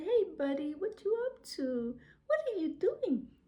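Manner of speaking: friendly, high-pitched, sing-song voice. Retelling speaking to an angry dog coming at him, in a high-pitched voice. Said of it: "I started to speak to him in a high pitched voice".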